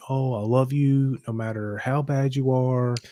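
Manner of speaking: mock sweet, nurturing, gentle voice. Retelling how a nurturing parent normally talks to the kids: imitating a sweet nurturing voice. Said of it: "She's a very sweet".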